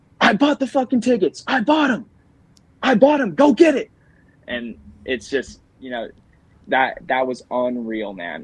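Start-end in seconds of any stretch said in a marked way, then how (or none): 0.2-3.9 shrill, very high, fired-up coach-style yelling. Retelling a race where the coach yells from the fence: imitating a coach yelling. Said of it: "he yells at us".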